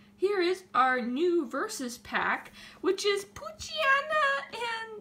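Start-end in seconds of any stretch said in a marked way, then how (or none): 2.8-5.0 voice breaking into a very high squeak. Showing a new card pack to viewers, voice cracking. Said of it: "why did my voice crack right there?".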